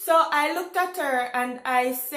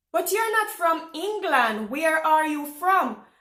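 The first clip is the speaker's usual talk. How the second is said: normal talking voice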